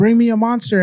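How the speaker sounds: play-acted, very high shouted yell. Retelling asking someone leaving to bring a drink, re-enacting a yell. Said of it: "And I'm yelling".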